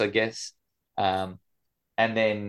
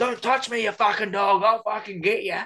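mock very high-pitched shrieking scream; 13 semitones higher than usual. Retelling what someone upstairs screamed, imitating someone screaming. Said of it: "someone u-, upstairs was screaming".

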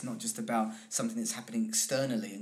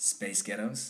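put-on American accent; 4 dB quieter than usual. Sharing a favourite fun fact, the speaker says the words in an american accent. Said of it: "Say space ghettos in an American accent".

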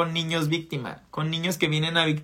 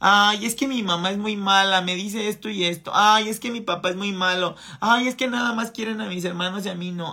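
mock whining, much higher pitch; 4 semitones higher than usual. A speaker mocks the complaining victim archetype, imitating a whiny victim. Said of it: "arquetipo niño víctima, quejumbroso".

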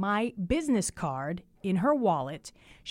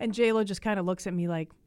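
ordinary talk

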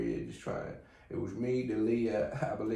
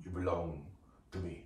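slight put-on Irish accent; 5 semitones lower, 7 dB quieter than usual. Trying to do the film Taken, Liam Neeson Taken impression. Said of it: "I can do Taken".

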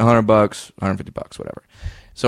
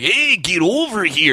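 fun, high, drawn-out dad call voice; 7 semitones higher than usual. Imitating a dad calling someone over: imitating a dad's voice. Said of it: "that's a fun voice".

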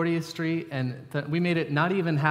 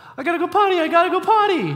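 put-on very loud, very high, shrill frantic toddler cry; 10 dB louder than usual. A parent retells their son shouting after the car pulls out, imitating Cohen's panicked yell.

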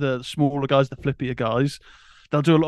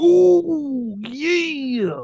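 very high wrestler voice, ooh drawn out up high; 12 semitones higher than usual. Naming a wrestling match he watched, then doing a Randy Savage voice. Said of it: "pretty good Randy Savage, uh, impression".

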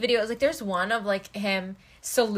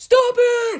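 piercing, very high and loud shriek; 13 semitones higher, 8 dB louder than usual. Describing a video of a man on a horse, retelling a scream. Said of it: "he screams, he's like".

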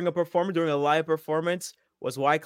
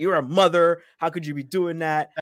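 put-on upset man's voice, slower; 3 dB louder than usual. Retelling how he reacted to a woman he once worked with: retelling someone upset. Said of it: "he was like all upset".

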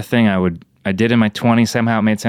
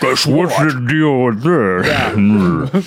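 slow speech sounding like through a voice changer; 3 semitones higher than usual. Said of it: "you're, like, doing a Bane thing".

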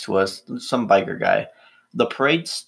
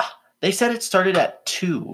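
acted, pitched way up, super annoyed and irritated; 10 semitones higher than usual. Retelling a woman's answer about the parade start time, mimicking a super annoyed reply. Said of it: "she was like super annoyed".

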